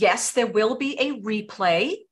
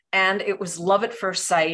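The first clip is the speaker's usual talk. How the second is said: ordinary delivery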